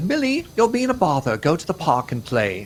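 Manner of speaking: put-on very British English accent, lilting, sing-song, high. Retelling what a visiting daughter said to Millie, in a put-on English accent. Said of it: "a part of my English accent for this whole thing".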